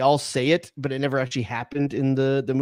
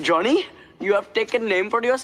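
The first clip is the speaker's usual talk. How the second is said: clumsy fake Indian accent, pitched up; 7 semitones higher than usual. Quoting a movie line in a bad Fisher Stevens impression.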